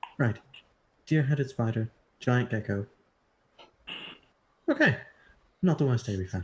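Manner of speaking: low, half-mumbled aside. Player as kay watching and talking to himself, muttering under his breath. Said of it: "and like under his breath".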